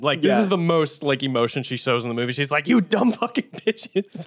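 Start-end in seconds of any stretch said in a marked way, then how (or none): 2.7-4.3 furious, angry scolding, high and drawn-out. Retelling a movie scene where she is mad at them, imitating angry scolding. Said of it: "she's mad at them".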